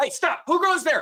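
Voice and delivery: very high, high-pitched shout. Voicing guards who spot the fleeing party: guards shouting. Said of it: "You can hear a couple of guards shout".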